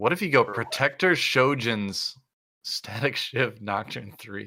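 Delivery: slow words broken up by laughter. Suggesting an odd item build for Nocturne, laughing while talking. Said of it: "I can't say without laughing".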